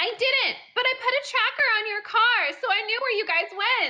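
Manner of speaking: high, shrill yell, pitched way up. Voicing a character who shouts back at the party: shouting in character. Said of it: "She shouts".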